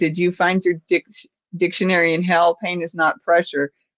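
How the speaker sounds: ordinary talk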